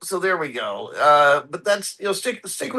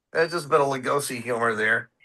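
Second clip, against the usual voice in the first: ordinary talk, nothing marked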